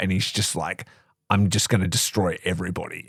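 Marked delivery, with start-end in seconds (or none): 1.3-3.1 imitated, serious, tough bad-boy voice. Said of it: "so serious".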